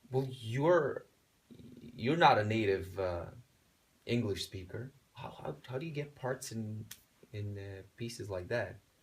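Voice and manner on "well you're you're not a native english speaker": plain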